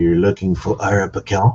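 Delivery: very low, hushed, under-the-breath voice. A game master voices a character standing between two others, speaking in a very low voice. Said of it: "in a very low voice, he says".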